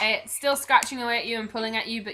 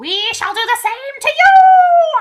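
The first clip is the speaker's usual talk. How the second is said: shrill squirrel shout, higher and louder; 15 dB louder than usual. Voicing a shrieking squirrel answering a threat: squirrel shrieking. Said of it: "the big grey squirrel who's shrieking in your ear".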